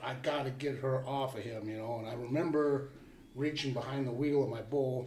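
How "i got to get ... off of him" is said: ordinary talk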